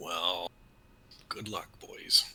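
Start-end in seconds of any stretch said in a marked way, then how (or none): 1.3-2.2 whispering. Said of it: "we'll try whispering before the attack".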